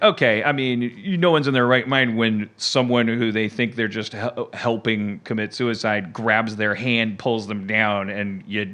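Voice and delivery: ordinary talk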